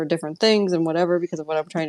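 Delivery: super fast, rushed speech. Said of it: "talking super fast".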